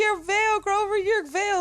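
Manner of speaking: play-acted very high yelling scream. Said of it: "screaming at the T V".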